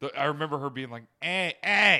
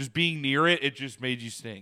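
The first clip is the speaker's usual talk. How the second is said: plain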